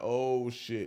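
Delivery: normal talking voice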